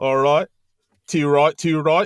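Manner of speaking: put-on British accent. Joking about bangers and mash with another speaker: put-on british accent. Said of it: "my flawless U K accent".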